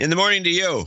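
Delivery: shrill, very high, angry yell. Returning a morning greeting to the other speaker, yelling like mad. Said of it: "you don't have to yell at me. Like you're mad".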